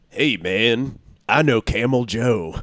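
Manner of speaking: very slow, deliberate, drawn-out cartoon mascot drawl. Answering what the McDonald's moon sounded like: McDonald's moon voice. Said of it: "What did he sound like?".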